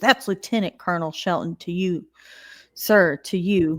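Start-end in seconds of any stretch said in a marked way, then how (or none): none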